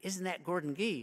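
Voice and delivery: hushed stage whisper. Retelling how a passing student half-whispered to another: imitating a half-whisper. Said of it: "he whispered to the other one".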